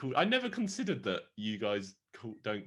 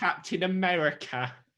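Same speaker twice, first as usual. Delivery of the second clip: put-on British accent; 8 semitones higher, 4 dB louder than usual. Joking about a British dub of the film, the speaker does Captain America in British accent. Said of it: "I love a British person doing a British accent".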